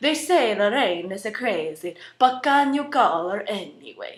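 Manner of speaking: put-on Italian-accented English. Demonstrating different accents one after another, now an Italian accent. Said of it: "in Italian accent".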